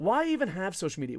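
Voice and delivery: plain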